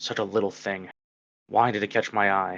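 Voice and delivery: muttered under breath. Voicing an overseer walking past in a scene, muttered under his breath. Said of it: "the overseer just like mutters under his breath".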